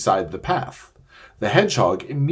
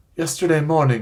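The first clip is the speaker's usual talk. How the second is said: feeble, weak, faint, fading, higher pitch; 5 semitones higher than usual. A narrator reads Shasta answering a dwarf who asks about his last meal, weak and faint. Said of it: "said Shasta weakly".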